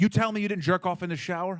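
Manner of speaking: sharp, accusatory voice. Retelling being questioned about the shower, imitating an accusatory question. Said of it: "He came at me hard".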